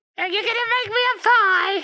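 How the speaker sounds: very high, loud, sketch-comedy style comic mum voice. Imitating how his mother talks, the speaker jokes with a co-host: Monty Python mother voice. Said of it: "like a Monty Python character".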